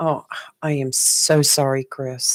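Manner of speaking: heartfelt, breathy, hushed, very slow, very drawn-out "sorry". Showing the first of two ways to say I'm sorry, a sincere apology. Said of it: "The first way is to mean it".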